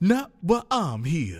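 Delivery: chill, relaxed comic-strip hero voice. Comparing another speaker's voice to a cartoon character: Bushido Brown voice. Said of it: "Bushido Brown from the Boondocks".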